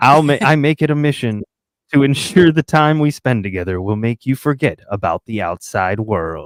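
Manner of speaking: very deep, seductive, sultry delivery. Reading a passage aloud to the other speaker, in a very deep, sultry voice. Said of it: "Just in a very deep, sultry voice".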